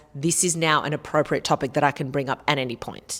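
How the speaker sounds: usual speaking voice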